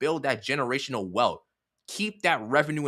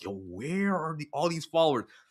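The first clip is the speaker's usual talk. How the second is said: fast, baffled, puzzled tone; 4 dB quieter than usual. Act out how she'll react to all the new followers you send her, imitating someone confused. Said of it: "she'll be so confused".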